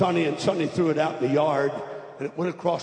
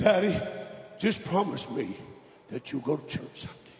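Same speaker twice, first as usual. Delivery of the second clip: put-on choked-up, choking voice; 4 dB quieter than usual. Retelling a dying boy's last words to his father: imitating a choking voice. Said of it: "He looked up at me with his voice choking".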